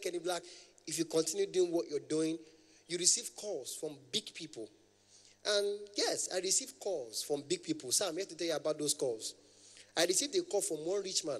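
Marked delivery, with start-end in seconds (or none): none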